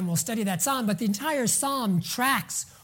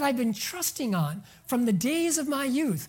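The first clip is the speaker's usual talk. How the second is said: ordinary talk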